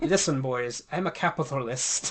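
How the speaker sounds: put-on loud, terrible, clumsy Scottish accent. Riffing with another speaker on a Christmas story, in a bad Uncle Scrooge impression. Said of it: "that was a terrible Scottish accent".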